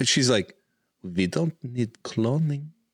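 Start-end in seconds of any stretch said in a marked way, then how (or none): 1.0-2.7 put-on German accent. Commenting on a scene, voicing a character's thoughts: Frau Farbissina German accent. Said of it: "I don't know why she's German".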